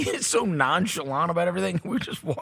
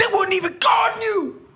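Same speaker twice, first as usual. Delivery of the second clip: put-on very high, shrill, high-pitched shouting yell; 13 semitones higher, 4 dB louder than usual. Telling a story about a guy who starts yelling, imitating someone yelling. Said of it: "he starts yelling whatever about something".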